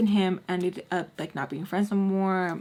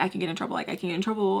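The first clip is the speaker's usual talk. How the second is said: ordinary talk, nothing marked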